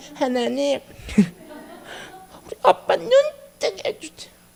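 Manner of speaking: put-on high, slow small child's voice. Retelling a son's prayer for his father: four-year-old child's voice. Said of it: "네 살 짜리 애기 목소리라고 생각하면서 들으세요".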